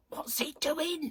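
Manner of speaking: put-on very high, shocked witch voice. Speaker recalls her mum's put-on voice, imitating mum's shocked witchy voice. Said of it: "It was one of those shocked voices".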